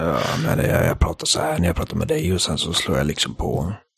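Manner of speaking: low, quiet, tired-sounding voice.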